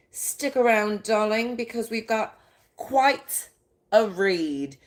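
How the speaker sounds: put-on British accent. Host inviting the audience to stick around, in a put-on British accent. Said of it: "the British accent comes through".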